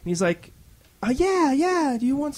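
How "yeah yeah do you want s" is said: put-on voice pushed very high. Retelling a long-haired player's answer to joining the game: imitating a higher voice. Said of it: "he has really kind of a higher voice".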